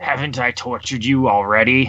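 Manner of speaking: scornful sneer. Game master voicing an orc addressing a player character, sneering. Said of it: "And like kind of like sneers".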